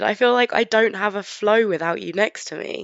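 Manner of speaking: ordinary talk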